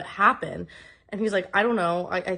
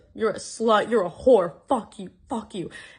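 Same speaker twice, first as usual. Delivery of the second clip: enraged, abusive, furious screaming tirade; 2 semitones higher, 3 dB louder than usual. Retelling a partner's angry reaction to being told to stop drinking: retelling his screaming. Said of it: "just starts screaming at me".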